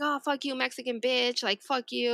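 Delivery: put-on, angry, going-off outburst. Retelling a stranger who suddenly went off at the speaker: imitating someone going off angrily. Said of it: "and then he just went off".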